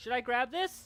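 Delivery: very high voice calling out, projected loudly. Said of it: "Micmac's gonna call out".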